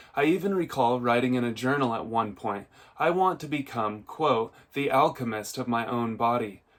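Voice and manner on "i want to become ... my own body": ordinary delivery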